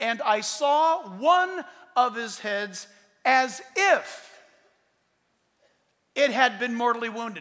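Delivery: slow, drawn-out reading, long pauses, every word stressed.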